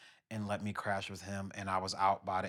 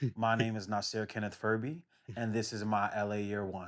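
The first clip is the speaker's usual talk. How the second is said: ordinary talk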